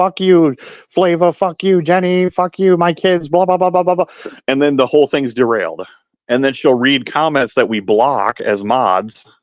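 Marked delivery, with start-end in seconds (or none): 0.0-4.1 mock high-pitched screaming rant, one after another. Retelling how she rants at chat trolls during a live: imitating someone screaming. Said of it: "start screaming and going down her list".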